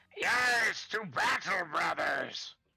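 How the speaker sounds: high, drawn-out, screamed creature battle cry. Voicing a freed Salamander calling its brothers to battle: Salamander screaming. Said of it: "hear the Salamander scream".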